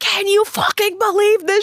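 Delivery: mock losing-it yell, very high and frantic. Retelling a phone call to a friend, imitating own frantic yelling. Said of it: "I was losing my mind".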